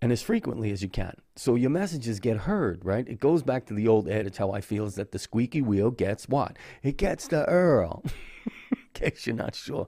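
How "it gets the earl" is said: slow put-on Brooklyn accent, "oil" said as "earl". Finishing the squeaky wheel adage as a joke, in a Brooklyn accent. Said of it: "That's with the Brooklyn accent".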